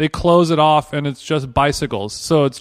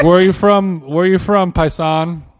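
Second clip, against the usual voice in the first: usual speaking voice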